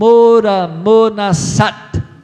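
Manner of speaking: shouted phrase. Left behind, speaker shouts a phrase in the runners' language, retelling own shout. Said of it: "E aí eu gritei assim".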